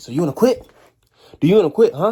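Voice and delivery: shrill, very loud, high drill sergeant screaming. Retelling a drill sergeant confronting a recruit: imitating a drill sergeant yelling. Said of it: "is yelling and everything".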